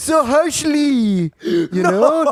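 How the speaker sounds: put-on French-ish accent. Retelling what an ex-girlfriend said about his comedy goal: imitating Miran's Frenchish accent. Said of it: "kind of a Fren-, Frenchish accent".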